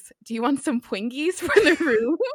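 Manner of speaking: put-on high, over-the-top cutesy, far too babyish voice. Speaker recounts a British father asking his son in a shop, imitating cutesy over-the-top voice. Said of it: "in a very cutesy, possibly over the top for his age voice".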